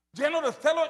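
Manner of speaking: "celo" stressed, rising end.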